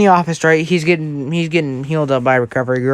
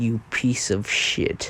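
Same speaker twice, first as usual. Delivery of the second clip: very low, dropped, barely-there near-whisper; 6 semitones lower, 11 dB quieter than usual. Retelling a scene where Deku confronts Bakugo, Deku speaking in a very low voice. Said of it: "in a very low voice".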